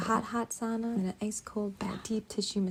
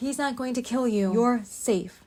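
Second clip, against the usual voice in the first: very authoritative, loud, firm, leaving no doubt. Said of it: "In a very authoritative tone".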